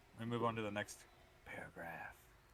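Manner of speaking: very hushed, quiet whisper close to the mic. Starting to read the next paragraph after being asked for a sexier voice: whispering. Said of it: "Did I whisper too much?".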